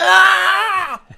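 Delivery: high, loud scream of pain.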